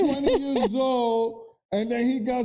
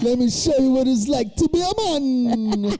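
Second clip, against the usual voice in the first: loud Russian-tinged accent, "man" stretched out; 5 dB louder than usual. Comparing how languages sound, speaker keeps going in a kind of russian accent. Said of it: "you sounded kind of Russian there".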